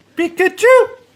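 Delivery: very high, loud, squeaky squeal. Taking turns doing a Pikachu impression: Pikachu impression. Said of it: "Why don't you give it a go".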